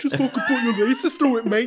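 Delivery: put-on English accent. Imitating another speaker's English way of talking about penalties: imitating an English accent. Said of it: "You sound so English right now".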